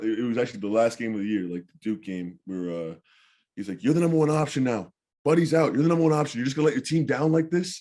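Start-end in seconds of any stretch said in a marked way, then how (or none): 3.8-7.8 loud yelling, high pitch. Retelling a coach yelling during the last game: retelling Coach Boeheim yelling. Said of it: "just yelling at me".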